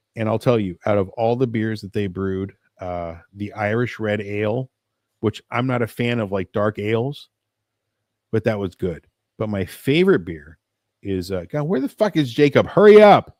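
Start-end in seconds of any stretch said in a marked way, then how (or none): 11.5-13.2 very loud, very high shout. Breaking off mid-sentence to call for Jacob, yelling. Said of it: "I don't mean to yell".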